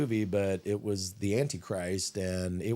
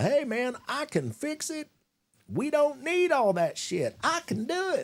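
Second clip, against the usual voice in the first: slick, smooth-talking patter, very high and swooping. Speaker acting out what a smooth-tongued devil will say, imitating a smooth-tongued devil. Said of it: "smooth tongued devil is going to".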